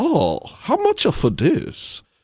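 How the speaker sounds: mock Chinese accent. Retelling talking to a store worker in a put-on chinese accent. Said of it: "speaking, like, a little bit Chinese at them".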